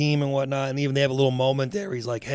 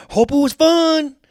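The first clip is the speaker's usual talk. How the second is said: put-on furious, raging yelling; 14 semitones higher, 9 dB louder than usual. Retelling the coach's locker-room rant after the loss: imitating a furious coach yelling. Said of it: "fucking Kilmer loses his shit in the locker room".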